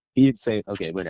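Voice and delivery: ordinary talk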